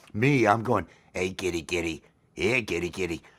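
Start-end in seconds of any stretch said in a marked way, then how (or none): 1.1-3.1 very eerie, low, creepy, unsettling coaxing voice. Speaker showing how he calls to a cat in his videos, creepy voice. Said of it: "people might get a little creeped by the voice".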